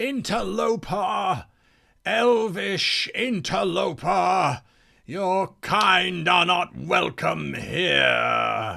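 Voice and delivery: angry spirit bellow, rasping, high, stretched out. Game master voicing a spirit that flares up at the players, shouting spirit. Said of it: "the spirit suddenly flares up and shouts at you".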